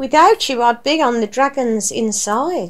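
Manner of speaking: plain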